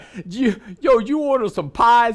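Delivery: thick, heavy, put-on Bronx accent. Retelling a phone call from a New York restaurant man about pies, heavy Bronx accent. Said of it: "heavy Bronx accent".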